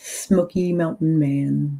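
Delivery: smoky stressed and said slowly. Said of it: "Emphasis on smoky".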